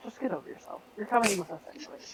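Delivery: dry, unimpressed, unbothered, near-whispered. Voicing Ada, who tells someone to get over themselves: deadpan. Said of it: "Ada's just going kind of deadpan".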